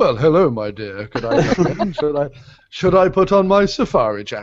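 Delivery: hammy, way over-the-top dubbed-sounding voice. Joking about having a man dubbed, the speaker imagines him arriving: Roger Moore voice. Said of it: "over the top he's just like".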